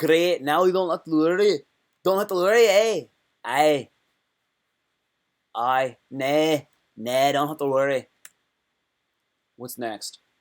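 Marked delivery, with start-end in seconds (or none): 0.0-8.1 loud Scottish accent, put on for laughs. Showing off an accent to the audience, in a put-on scottish accent. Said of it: "I hope you like my Scottish accent".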